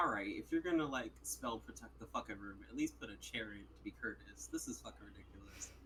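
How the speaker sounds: very quiet, low, hushed grumbling under the breath. Player voicing Malik walking into a bare wooden room, muttering under breath. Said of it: "under his breath, he mutters".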